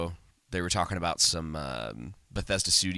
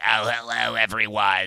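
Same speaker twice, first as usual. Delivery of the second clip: put-on loud old smoker lady voice; 4 semitones higher, 6 dB louder than usual. Describing losing their voice for three days, the speaker imitates an old smoker lady voice. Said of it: "the like old smoker lady that's like".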